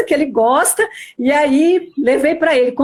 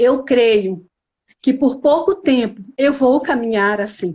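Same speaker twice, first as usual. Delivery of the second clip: put-on speaking through tears, crying; 3 semitones lower than usual. Retelling own words to the sisters: retelling own words said crying. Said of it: "eu falei isso chorando, em lágrimas".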